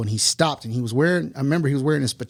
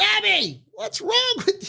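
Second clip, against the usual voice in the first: high-pitched, play-acted grandmother hollering. Retelling waking to grandmother calling to grandfather, imitating grandmother hollering. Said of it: "my grandmother hollering".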